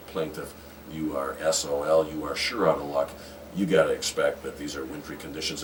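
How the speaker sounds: ordinary delivery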